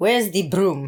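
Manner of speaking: clumsy, bad, put-on fake Russian accent. Asked whether an accent was Russian, trying a bad Russian accent. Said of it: "That was so bad".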